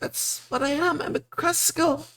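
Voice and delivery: sobbing through the words, very high voice. A storyteller voices a crying cresco asked its name by a player: crying while speaking. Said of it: "And she just keeps crying".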